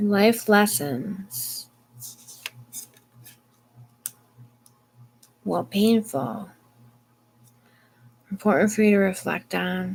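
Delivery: slow, tired delivery. Tired reader giving a tarot message: tired, talking slow. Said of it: "I know I'm talking slow".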